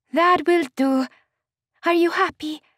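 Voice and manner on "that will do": words let out on a sigh, slightly high. Maria answers news of a bigger wedding to come, with a sigh. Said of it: "Maria sighed".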